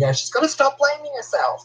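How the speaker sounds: mock, very high, swooping kid's tantrum yell. Retelling how he threw blocks around and yelled: imitating Michael's tantrum yelling. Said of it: "He was throwing blocks around and just yelling".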